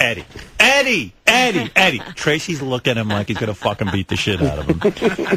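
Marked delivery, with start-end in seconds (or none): 0.0-2.0 play-acted screaming of one word, repeated. Telling a story about Benji, re-enacting him screaming a name. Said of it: "First he screams".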